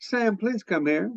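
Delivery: quiet, still, small voice. Recalling how his mother would call him over, in a still small voice. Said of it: "speak in a still small voice".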